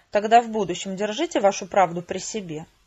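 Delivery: plain reading voice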